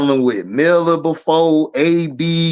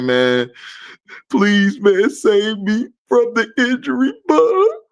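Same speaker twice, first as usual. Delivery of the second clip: fake sobbing, higher pitch; 5 semitones higher than usual. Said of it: "I'll cry on your lap and say".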